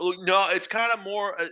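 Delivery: high, hesitant, unsure stammer with false start. A coworker, asked a tricky question, struggles to answer; imitating a coworker stammering. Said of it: "he was stammering".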